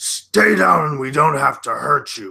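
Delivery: booming, very loud, high bellow. Narrator voicing Bastrad to the slaves on the floor, Bastrad bellowing. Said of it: "bellow out to the slaves".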